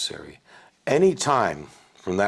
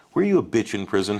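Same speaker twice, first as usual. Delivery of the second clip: ordinary talk, nothing marked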